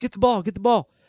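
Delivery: high scream. Retelling a defensive coach yelling from the sideline: imitating someone screaming.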